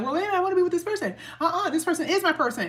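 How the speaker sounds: put-on, very high-pitched, stubborn kicking-and-screaming tone. Imitating listeners who refuse to let a partner go: imitating someone protesting. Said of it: "kicking and screaming like".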